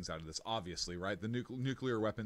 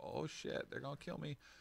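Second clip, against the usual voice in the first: bad, soft, whispered, panicked put-on impression. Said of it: "I can't do the voice like you".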